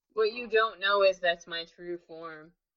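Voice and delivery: ordinary talk, nothing marked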